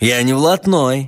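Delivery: insolent, cheeky delivery. A man called a thug by another man answers him, insolently. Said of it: "сказал человек нагло".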